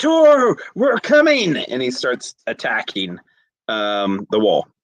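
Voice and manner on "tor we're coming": very high, loud, called-out shout. Voicing a fighter calling to a trapped ally: yelling out. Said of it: "he yells out".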